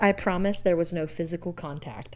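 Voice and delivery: ordinary talk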